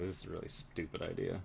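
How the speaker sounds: very hushed, quiet, sighed-out aside. Voicing Casimir as the party walks up the hallway: Casimir sighing. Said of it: "just basically sigh and is like".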